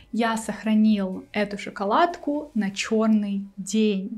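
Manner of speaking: ordinary talk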